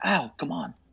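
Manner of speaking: soft, quiet half-whisper in character. Walking through a door in character, half-whispering in character. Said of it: "I whisper".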